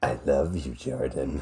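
drawn-out, very slow, soft half-whisper. Saying a fond goodbye line into a guest's ear: half-whispering. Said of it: "I'm gonna whisper it into your ear".

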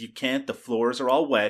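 ordinary talk

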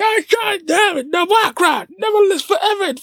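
mock out-of-nowhere shrieking yell, very high. Show how Mr. Rob would come out of nowhere, imitating Mr. Rob screaming. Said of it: "Why are you screaming?".

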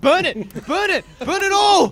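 re-enacted yell. Telling a story about setting fire on a train, retelling a yell. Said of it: "I'm yelling".

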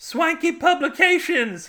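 piercing, shrill, very high shrieking scream. Reading a story aloud, voice the woman as she is screaming. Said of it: "She screamed".

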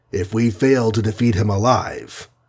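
ordinary talk

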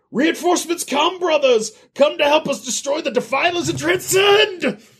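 shrill, high, screaming call pitched way up. Game master plays a cult's voice recording sent by text: screaming. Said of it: "It's screaming".

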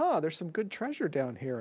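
quiet, soft, casual offhand remark. Calling to the others in character during a game: soft voice. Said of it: "in a soft voice".

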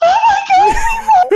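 very high, tearful, joyful crying. Retelling the moment the team won, imitating own tearful cry. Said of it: "And I'm just crying".

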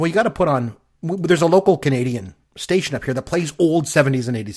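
normal talking voice

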